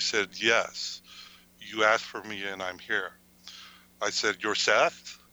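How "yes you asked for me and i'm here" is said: put-on deep, guttural voice. Recounting a channeling session where Seth answers the speaker, deep guttural voice. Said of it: "in this deep sort of guttural voice".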